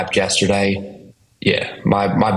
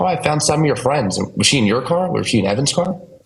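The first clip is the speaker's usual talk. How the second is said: put-on Scottish accent with raised pitch; 6 semitones higher than usual. Retelling what the Airbnb host said on the phone, in a Scottish accent. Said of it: "in her Scottish accent".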